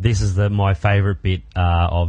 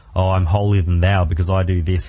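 normal talking voice

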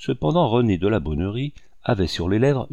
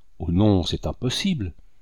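plain reading voice

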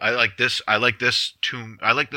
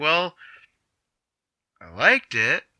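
put-on voice of woman in her fifties, higher; 6 semitones higher than usual. Retelling what an audience member said after the show: imitating a woman in her fifties. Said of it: "That's the best imitation I think I could do of how she sounded".

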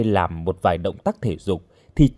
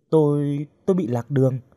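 plain

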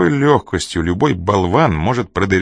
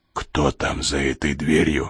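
very quiet, low, hushed half-whisper; 5 semitones lower, 5 dB quieter than usual. A man silently steps up to a frightened man and asks about a door, half-whispering. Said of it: "прошептал Коридон".

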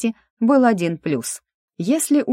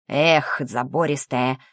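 mumbled, muttered under breath, much lower; 4 semitones lower than usual. A grandmaster drinking at work, in a mutter. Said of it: "пробормотал он".

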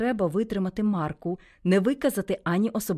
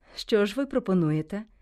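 usual speaking voice

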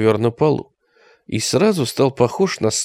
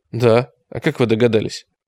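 ordinary delivery

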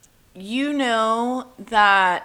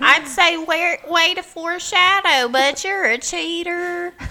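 silly, high, squeaky put-on voice. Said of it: "Why are you talking in that voice?".

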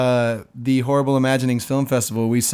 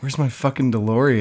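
normal talking voice

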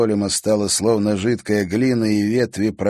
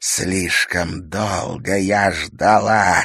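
slow hiss with each word drawn out. Irma, picking up a sword and stepping toward Natalya, hissed. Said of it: "прошипела она".

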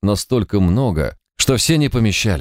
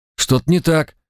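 voice lifted sharply, raised and pitched up; 7 semitones higher than usual. A pilot under a cheater's threat speaks up for the first time: raising his voice. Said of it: "впервые повысил голос пилот".

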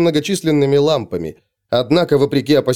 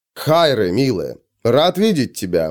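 friendly, warm, smiling, welcoming tone; 3 semitones lower than usual. A man greets a young woman who has just bowed to him, smiling warmly. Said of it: "приветливо улыбнулся Федор".

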